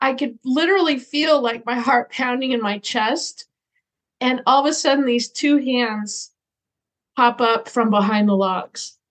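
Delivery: ordinary talk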